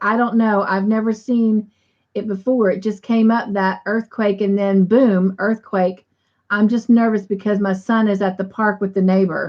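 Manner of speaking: ordinary delivery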